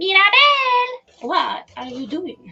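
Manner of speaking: put-on drawn-out, slow, high grandmother voice. Streamer asking chat what to build, imitating mirabel's grandmother. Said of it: "I'm trying to sound like her grand".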